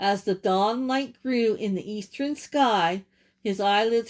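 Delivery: plain reading voice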